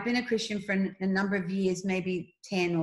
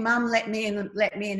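plain

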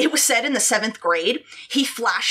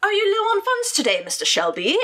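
bad, really phony English accent, very high; 10 semitones higher than usual. Retelling how Dana came up to someone at the mall, in Dana's bad fake English accent. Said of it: "in like a really bad fake phony English accent said".

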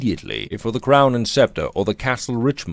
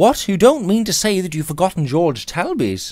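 reproachful, pitched-up, exclaiming tone; 8 semitones higher than usual. A stranger responds after the other man fails to remember him: reproachful exclamation. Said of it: "exclaimed the stranger reproachfully".

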